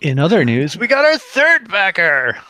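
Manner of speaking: high-pitched, loud, drawn-out unhinged madman cry. Announcing the third backer to the others, said like a crazy person. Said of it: "I had to say it like a crazy person".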